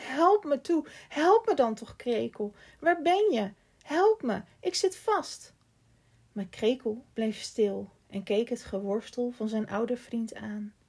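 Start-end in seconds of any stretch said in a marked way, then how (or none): 0.0-5.5 out-of-breath, breathless, high, loud crying out. Stuck and struggling, he calls to his old friend for help, crying out of breath. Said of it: "riep buiten adem".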